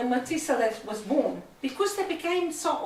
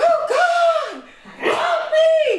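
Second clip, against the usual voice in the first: very high, very loud, very slow, drawn-out scream; 9 dB louder than usual. Speaker tells a story about a man hanging from a cliff; imitating screaming. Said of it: "he's screaming".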